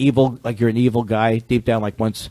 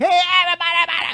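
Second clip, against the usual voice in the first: fake vintage radio DJ voice. Explaining where old radio DJs got their style: Wolfman Jack voice. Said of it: "they were just like from Wolfman Jack".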